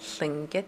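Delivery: Tlingit, voice rising to high tone on -git. Explaining a tonal language, saying tlingit with rising final syllable. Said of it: "it's a high tone at the end, so your voice will go up at the end".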